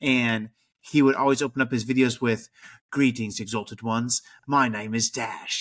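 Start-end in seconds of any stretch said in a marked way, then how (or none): 2.9-5.6 put-on Australian accent. Retelling how a YouTuber opened every video: imitating Dash Star's Australian accent. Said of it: "he had a freaking Australian accent".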